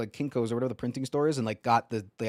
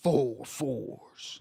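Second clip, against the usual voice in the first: pirate captain character voice; 2 semitones higher than usual. Calling four fours in the dice game from Pirates of the Caribbean: Davy Jones impression. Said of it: "that was a brilliant impression".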